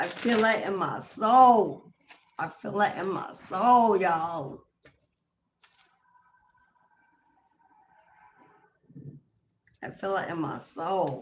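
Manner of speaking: voice close to crying, holding back tears. Reacting to a card just read out live, holding back tears. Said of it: "I'm not crying on live".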